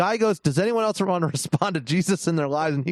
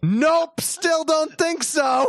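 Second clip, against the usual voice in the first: put-on shrill, very high shrieking scream; 10 semitones higher than usual. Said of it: "Myron screams again".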